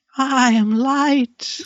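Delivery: bizarre, very high, slow voice.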